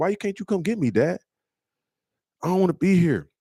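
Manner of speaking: put-on weepy, high, tearful child voice. Retelling a son's phone call, imitating a crying son. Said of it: "he called me about two weeks after the school incident crying".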